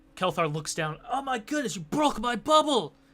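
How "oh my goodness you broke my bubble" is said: ogre voice pitched very high. Voicing Kelthar after a creature's attack in the game, slipping into a Shrek voice. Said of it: "I'm trying to turn this to Shrek here".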